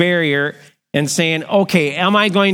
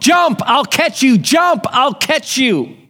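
play-acted yell, high-pitched and urgent; 7 semitones higher than usual. Retelling a story of a father calling to his son on a burning roof: imitating a father yelling. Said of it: "yelling to him".

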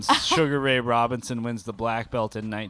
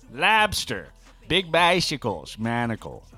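over-the-top, swooping, exaggerated New England accent. Echoing the other speaker's bit, in a Kennedy New England accent. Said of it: "That's how the Kennedys sound".

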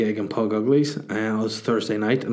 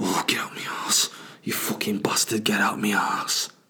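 put-on northern English accent; 3 dB quieter than usual. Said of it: "it sounds a bit like Jon Snow".

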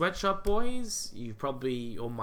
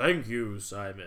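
put-on baritone voice; 8 semitones lower than usual. Speaking as YouTube, replying to Simon's praise, in a deep YouTube voice. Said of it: "YouTube has a baritone voice".

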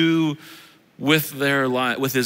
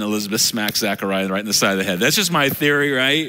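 ordinary talk

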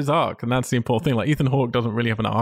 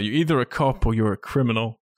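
ordinary delivery

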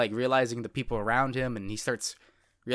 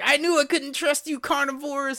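put-on very high, panicked, freaked-out outburst; 14 semitones higher, 4 dB louder than usual. Retelling an anime scene where a character freaks out: imitating a character freaking out. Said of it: "she freaks out and is like".

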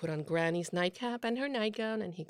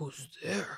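wolf voice, disguised, as soft as possible; 5 semitones lower, 4 dB quieter than usual. Narrator reads the wolf answering the child's knock, wolf's voice made soft. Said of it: "making his voice as soft as he could".

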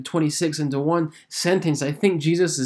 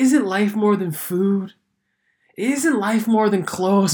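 laid-back, chill hippie voice; 4 semitones higher than usual. Speaker quoting verses 25 and 26, in a hippie Jesus voice. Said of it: "we get this hippie version of Jesus".

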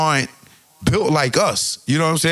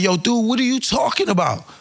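put-on yelling, acted-out shouting; 6 semitones higher than usual. Retelling an interview where one man yells at another, retelling a yell. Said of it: "he's yelling at him".

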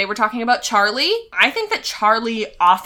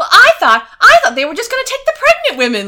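put-on old-timey voice, much higher, louder, faster; 12 semitones higher, 7 dB louder than usual. Discussing a scene from a show, speaker imitates Carl's old-timey movie voice. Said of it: "has this voice that, like, ... an old-timey movie".

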